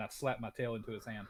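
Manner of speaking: ordinary talk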